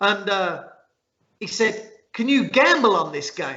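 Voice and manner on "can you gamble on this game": imitated American accent. Retelling a conversation, the speaker quotes the other man, in an American accent. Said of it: "this is my American accent".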